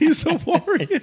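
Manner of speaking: high, slow, drawn-out, laughing mock awe.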